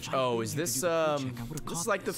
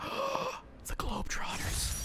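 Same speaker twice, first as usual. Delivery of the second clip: surprised gasp, much higher pitch, quieter; 4 dB quieter than usual. Player reading district names off the game map, gasping in surprise.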